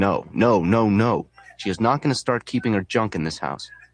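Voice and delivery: ordinary talk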